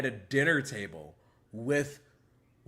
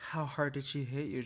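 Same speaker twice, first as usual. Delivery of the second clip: mock taunting tone, much quieter; 6 dB quieter than usual. Retelling a man's question to jocelyn, imitating his taunting tone. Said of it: "say it like this taunting tone".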